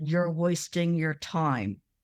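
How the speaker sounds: put-on speech through clenched, gritted teeth. Retelling what a spirit's voice answered, imitating a man talking through clenched teeth. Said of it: "sounded like he was clenching his teeth".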